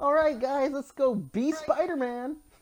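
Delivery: put-on high, slow, eager young kid voice. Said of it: "kinda has that, like".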